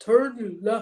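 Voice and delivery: loud, booming puppet-monster voice. Telling a co-host that a navigation app once had a character voice: Cookie Monster voice. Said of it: "Cookie Monster was on Waze?".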